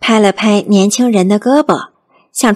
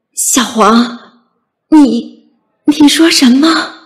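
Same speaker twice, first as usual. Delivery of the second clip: trembling, quavering, shaking voice; 3 semitones higher than usual. Narrator reading a man's question to Huang in a tense scene, trembling voice. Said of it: "他颤声地问".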